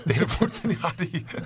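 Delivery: high-pitched, laughing voice.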